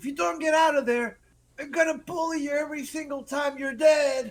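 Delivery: shrill, very high, very loud shouted yell. Voicing a character running back to the others: yelling in character.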